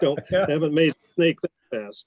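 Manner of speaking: strong, pronounced Texas drawl. Retelling words said outside a village amid smoke: Mickey McIntosh's slow Texas drawl. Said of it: "his Texas drawl was so pronounced, so slow".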